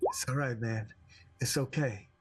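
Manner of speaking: quiet stage-whispered delivery. A player's character hugs a man tightly to comfort him: whispering in his ear. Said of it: "kind of whisper in his ear".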